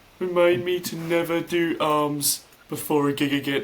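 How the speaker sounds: terrible fake Birmingham accent. Retelling what the drummer said after a gig: terrible Birmingham accent. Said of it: "this is gonna be a terrible Birmingham accent".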